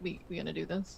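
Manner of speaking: barely audible, very quiet, hushed half-whisper. Asking a fellow character quietly if they are going ahead: half-whispering in character. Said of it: "I'm just whispering".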